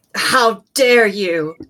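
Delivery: very stern, commanding voice. Voicing a character who strikes a foe with lightning: very stern. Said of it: "accompanying the lightning bolt will be a very stern".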